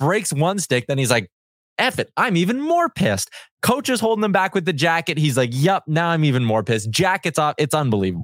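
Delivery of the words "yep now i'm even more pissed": normal talking voice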